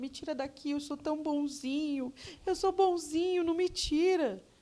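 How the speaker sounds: high, tearful, begging voice in a ghostly style. Retelling what unclean spirits said in a house: imitating spirits crying. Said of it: "eles ficavam chorando".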